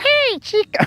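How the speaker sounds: very high-pitched puppet voice. Suggesting what another speaker could say on an audio track: Elmo voice. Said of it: "that was Elmo".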